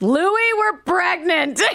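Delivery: very high-pitched, loud yell. Retelling what she shouted to her brother's old friend at a stoplight, retelling a yell. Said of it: "She's yelling it in the streets".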